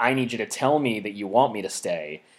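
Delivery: ordinary talk, nothing marked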